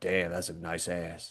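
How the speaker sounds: very quiet, slow, under-the-breath mumble. Retelling what a man in the next aisle said: imitating a man mumbling. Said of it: "the mumbling of a thirty-some-year-old guy going like".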